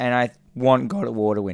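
voice cracking and breaking. Speaker saying which game they want to win, voice cracking. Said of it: "My voice cracked".

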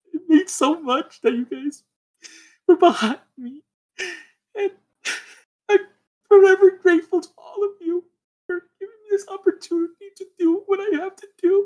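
choked-up, tearful crying, very high-pitched. Thanking friends and supporters, actually crying. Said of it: "I'm actually legit crying".

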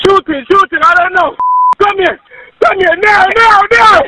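frantic, panicked screaming. Calling emergency services about a shooting, screaming in panic. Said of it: "Sir, stop screaming".

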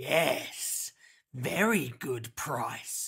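sinister, menacing, threatening voice. A narrator reads a man's line to a young girl, said menacingly. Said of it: "said the man menacingly".

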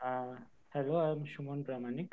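very soft, barely audible, too quiet voice.

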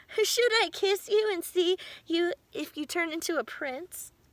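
said through a laugh. A woman speaks to a frog she has picked up, laughing. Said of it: "she said, laughing".

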